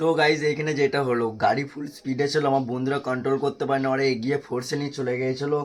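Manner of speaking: low, soft, hoarse voice.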